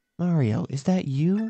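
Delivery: eerie, ominous, creepy, spooky, foreboding voice. Playing a Mario game, reaching the main palace doors: ominous Princess Peach voice. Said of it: "Says ominous voice".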